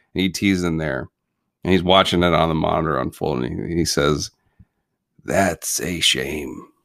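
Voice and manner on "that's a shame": deep, long, drawn-out gravelly voice. Retelling a film's last scene, quoting the alien's line: ET gravel voice. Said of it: "He does that long gravel voice".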